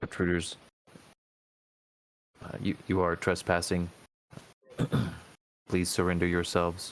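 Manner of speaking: toneless, flat, machine-like monotone. Voicing a plated guardian that warns the trespassers, monotone warning. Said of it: "a warning in sort of a monotone".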